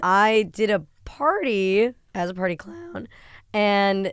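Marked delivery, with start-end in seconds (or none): 0.0-3.1 voice breaking and cracking mid-phrase. Guest in the spotlight answers the hosts, voice cracking. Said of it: "Her voice cracked when she said that".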